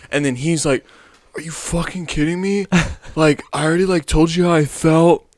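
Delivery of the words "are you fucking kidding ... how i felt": pitched-up, dude-bro frat guy voice. Retelling what a guy said back to her: frat boy voice. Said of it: "You're turning him into a frat boy, man".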